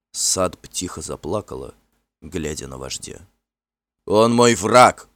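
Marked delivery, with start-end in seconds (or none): 4.1-4.9 growled words. Finn answers the frightened, quietly crying Sadb with a growl. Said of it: "прорычал Финн".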